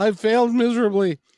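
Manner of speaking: high, tearful, put-on weepy crying delivery. Retelling the mother crying in the car: imitating someone crying. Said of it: "she's crying because, and saying".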